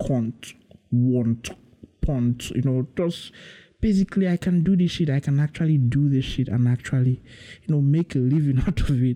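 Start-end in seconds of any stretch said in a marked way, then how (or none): 0.1-2.5 fake British accent with retching vowels. Joking about switching from an American accent, demonstrating a fake British accent. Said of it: "get a British accent".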